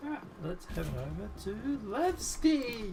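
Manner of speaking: high, slow, enthusiastic announcer voice.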